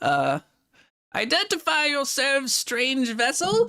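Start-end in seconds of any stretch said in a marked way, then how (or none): 1.1-3.7 weak, strained, high-pitched, unimpressive shout. Voicing someone hailing a strange vessel over wind and waves; unimpressive voice trying to shout. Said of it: "rather unimpressive voice trying to shout".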